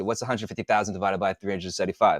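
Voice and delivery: very fast, rattled-off speech. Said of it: "Why am I talking so fast?".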